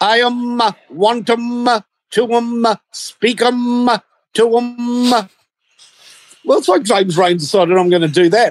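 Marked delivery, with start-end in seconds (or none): 0.0-5.3 very slow, pitched-up, otherworldly alien transmission voice. Retelling a man's strange transmission, speaking like the alien. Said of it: "This guy is actually speaking like the alien".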